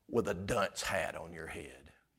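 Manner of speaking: very soft, very low, hushed sarcastic tone. Speaker adding a mocking aside for the audience: sarcastic. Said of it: "How's that for sarcasm?".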